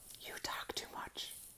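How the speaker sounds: very soft whisper under the breath. Reading a story aloud, the narrator gives a character's whispered line. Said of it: "whispered Lola".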